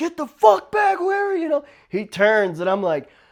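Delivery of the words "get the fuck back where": shrill, high, sharp yelling. Retelling a man who yelled at him before recognizing him, retelling a yell. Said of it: "he's like yelling like".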